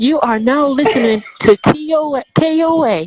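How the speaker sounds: very loud, high anime character voice. A host offers to record show tags, doing an anime-sounding voice. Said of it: "you sounded like anime then".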